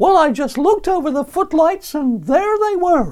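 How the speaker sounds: very high, loud puppet voice. Retelling an interview with a ventriloquist act, give the puppet's answer as a Lenny the Lion impression. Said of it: "here comes an impression of Lenny the Lion".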